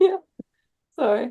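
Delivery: high, giggling laughter through the words. Answering a request to introduce a pick: laughing while talking. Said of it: "I gotta compose myself".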